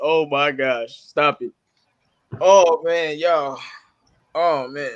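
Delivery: slow, angry speech with laughter through the words. Reacting to the team losing, laughing while talking, mad. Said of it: "I'm so mad I start laughing".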